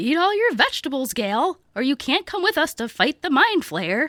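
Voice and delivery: motherly mom voice. Showing how a mom sounds, imitating Judy, her mom. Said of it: "She sounds like this".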